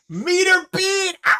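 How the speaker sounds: screaming with excitement. Reacting to a roll result: screaming with excitement. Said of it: "I didn't mean to scream in everyone's ear".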